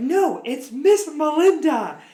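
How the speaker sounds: put-on very slow, high, drawn-out, upset yell. Retelling telling off a kid in class: imitating own yelling. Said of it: "And so I started yelling at him".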